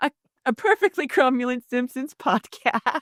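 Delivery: speech broken by laughter. Reading out a joke podcast title, laughing while talking. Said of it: "I made myself laugh with that one".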